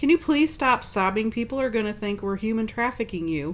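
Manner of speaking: normal talking voice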